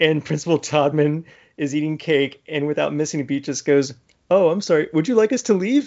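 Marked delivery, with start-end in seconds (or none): 4.3-5.9 put-on friendly authority voice. Retelling a scene, imitating Principal Todman: imitating Principal Todman, friendly. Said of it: "so friendly about it".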